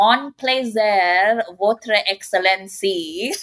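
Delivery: put-on slow, terrible, effortless, English-sounding French accent. Retelling how an actress spoke french in a film: imitating a terrible french accent. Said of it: "one of the worst French accents I have ever heard".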